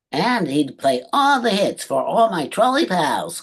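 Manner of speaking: high troll radio DJ voice. Showing a voice once used for a troll radio DJ: high troll DJ voice. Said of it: "make my voice go up like this".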